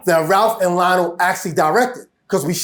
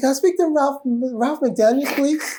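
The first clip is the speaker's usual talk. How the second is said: gentle, soft-spoken, high pop-star voice, pitched up; 7 semitones higher, 3 dB quieter than usual. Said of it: "in a [name] voice".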